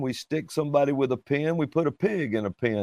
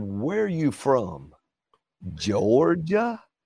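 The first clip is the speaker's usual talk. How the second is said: lilting, slow, swooping, stretched-out sing-song. Retelling what a lady at a coffee counter asked: imitating the lady's way of asking. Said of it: "She said it like that".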